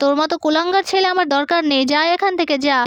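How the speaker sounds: plain reading voice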